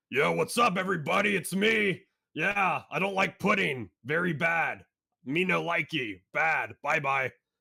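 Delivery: cartoon voice pushed high and loud. Showing viewers the character voice the speaker enjoys doing: Knuckles voice. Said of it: "here's my Knuckles voice".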